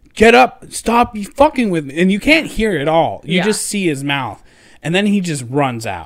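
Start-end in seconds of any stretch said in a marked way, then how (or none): 0.2-2.0 mock yelling, slower. Retelling how a man yelled at someone he thought was joking, retelling a yell. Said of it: "he started yelling at him like".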